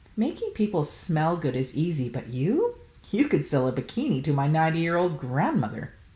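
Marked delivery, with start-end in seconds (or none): none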